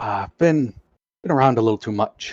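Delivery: hushed whisper. A player's character leans in to the doctor, whispering. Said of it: "lean in and whisper to him".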